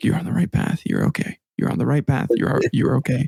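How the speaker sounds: hushed, whispered muttering to oneself. Retelling walking a dark path, reassuring oneself: imitating own past whisper. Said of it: "whispering to myself".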